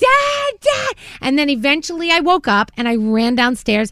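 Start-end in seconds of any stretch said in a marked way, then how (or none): 0.0-0.9 very high-pitched, desperate scream. Speaker retelling a dream of trying to get her dad to stay, reenacting screaming. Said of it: "I started screaming".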